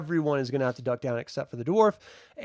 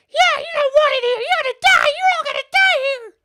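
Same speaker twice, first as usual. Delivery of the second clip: very high, very loud, shrill screaming monster voice; 9 dB louder than usual. Game master voicing an attacking kobold, screaming kobold voice. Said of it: "Kobold just screamed out".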